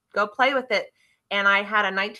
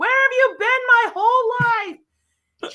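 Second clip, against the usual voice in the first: mock very high, drawn-out, ecstatic excited scream; 13 semitones higher, 5 dB louder than usual. Retelling a woman screaming the whole time in the car; imitating an excited scream. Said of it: "she's screaming the whole time".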